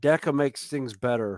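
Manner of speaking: normal talking voice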